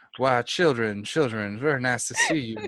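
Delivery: put-on creepy character voice. Retelling how creepy Doctor Midnight greeted them: Doctor Midnight voice. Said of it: "his voice didn't help any either. He's like".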